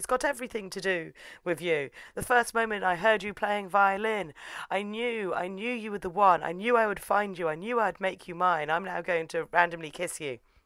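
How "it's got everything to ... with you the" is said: usual speaking voice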